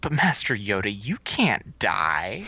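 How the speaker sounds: acted innocent childlike voice. Retelling a film scene, imitating Luke Skywalker's innocent voice. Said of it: "Luke has the most innocent, uh, voice".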